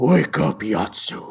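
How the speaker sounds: loud shout swelling steadily to its peak. Narrating a voice waking a sleeping character: louder and louder call. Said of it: "it gets louder and louder".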